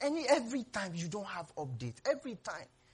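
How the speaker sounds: high, wide-pitched, impatient scolding voice.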